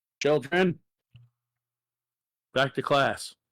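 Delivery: booming, very loud voice. A game narrator voices a woman summoning children, very loud call. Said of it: "And then she quite loudly, ... very loudly, probably about triple the volume".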